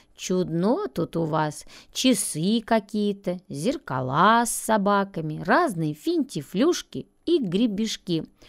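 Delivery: plain reading voice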